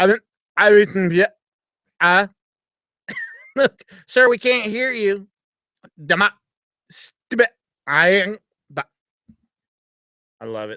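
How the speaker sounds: acted flustered stammering. Retelling how he answers callers, the speaker acts out flustered stammering. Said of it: "And I'll go".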